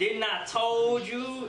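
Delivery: put-on Southern accent, very slow drawl. Introducing two guests on an extra episode: put-on southern accent. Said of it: "I'm just trying to be Southern".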